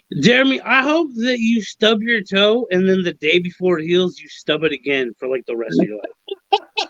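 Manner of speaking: usual speaking voice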